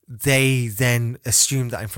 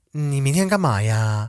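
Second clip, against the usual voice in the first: mock dainty effeminate talk, added 'ya' at end; 3 semitones higher than usual. Speaker demonstrating to listeners how they talk, imitating dainty, effeminate speech. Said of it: "at the end there's always a ah or a ya".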